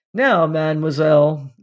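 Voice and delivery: ordinary talk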